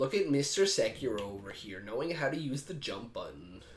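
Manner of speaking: soft, smug, smarmy douchey voice. Mocking another player's jump attack in a game, in a douchey mocking voice. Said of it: "I just said it in a douchey voice".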